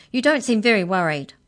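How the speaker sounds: very loud, sharply snapped delivery. Mallory whirls on the little mouse and snaps at it, snapping. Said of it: "she snapped".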